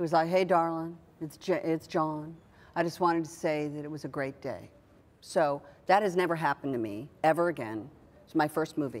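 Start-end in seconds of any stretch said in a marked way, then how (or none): 0.3-4.7 put-on drawling, stretched-out southern accent. Retelling a phone call after the first day on a movie: imitating John's southern drawl. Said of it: "in his southern drawl".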